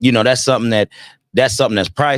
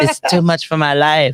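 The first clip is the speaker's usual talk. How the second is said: put-on young girl voice, higher pitch; 6 semitones higher than usual. Imitating what every young girl believes about her hard life: imitating a young girl's voice. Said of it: "that's gonna be the voice".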